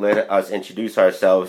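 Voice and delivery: ordinary delivery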